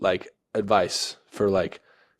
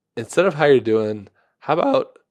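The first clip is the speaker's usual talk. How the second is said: voice breaking into a very high crack; 5 semitones higher, 4 dB louder than usual. Podcast host asks the co-host for life advice to start the episode; voice cracking. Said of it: "voice crack already".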